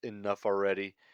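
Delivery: ordinary talk, nothing marked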